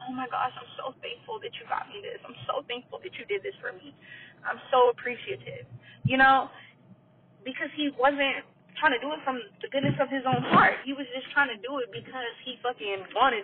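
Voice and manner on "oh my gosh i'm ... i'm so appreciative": over-effusive, grovelling, gushing fake grateful tone. Acting out a woman thanking a stingy man on her knees: mock grovelling gratitude. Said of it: "get down on your hands and knees".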